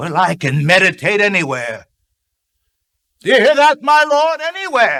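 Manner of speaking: deep, low voice rising steadily in pitch. An old man calls out to his lord, speaking in a loud voice. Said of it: "you certainly have a loud voice".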